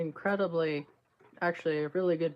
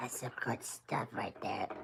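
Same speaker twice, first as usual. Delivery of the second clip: breathy, half-whispered chain-smoker voice; 6 semitones lower, 11 dB quieter than usual. Right after a sip of coffee, remarking on it: chain smoker voice. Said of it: "Sound like a chain smoker there".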